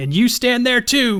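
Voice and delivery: shrill, very high-pitched creature yell. Voicing the Gwerk calling out during a fight: yelling as the Gwerk. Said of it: "the Gwerk yells out".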